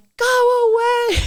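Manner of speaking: put-on very high, shrill, frantic panicked screaming. Recalling a huge crash on the hill behind at night, retelling panicked screaming. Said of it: "I started screaming like".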